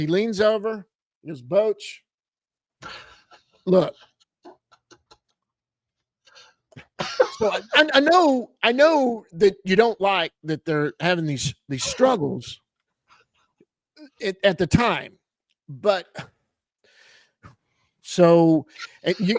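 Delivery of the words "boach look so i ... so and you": put-on slow, stumbling, rambling, long-winded voice. Imitating a colleague who takes a long time to ask a question: Evan impression. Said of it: "Let me see if I can do my Evan impression".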